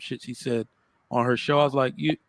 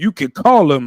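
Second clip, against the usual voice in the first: mocking put-on pastor pimp voice, louder; 3 semitones higher, 10 dB louder than usual. Retelling what she said when called out, imitating her pastor pimp voice. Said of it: "she got her little pastor pimp voice".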